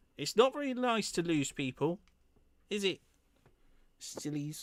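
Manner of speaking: tiny, impish, teasing goblin voice. A game master voices a tiny goblin leaping out of the darkness; tiny goblin voice. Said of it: "little tiny goblin leaps out of the darkness".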